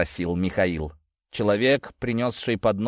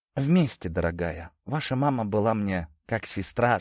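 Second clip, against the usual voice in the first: ordinary delivery, nothing marked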